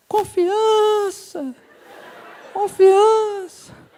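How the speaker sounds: very high-pitched, echoing, movie-style voice from beyond. Retelling a first kiss, voicing the voice from beyond in an echoing movie-style voice. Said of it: "com a voz com eco e tudo".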